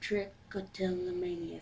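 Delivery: word "trichotillomania" drawn out slowly.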